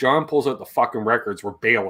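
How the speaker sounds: imitated under-breath mutter. Retelling how Dad would lean over to Mom: imitating a deadpan under-breath mutter. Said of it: "under his breath".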